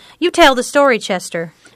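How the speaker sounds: plain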